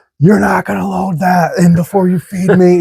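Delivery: put-on, super high, squeaky cat voice. Speaker acts out his complaint as they start loading the gear, super high-pitched voice. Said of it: "It's like a super high pitch".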